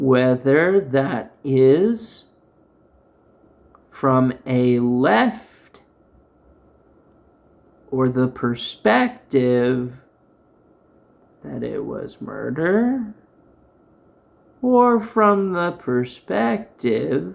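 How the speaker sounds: deliberately very slow speech. Trying to make a point clear after struggling for words: talking very slowly. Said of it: "I guess I have to talk very slow".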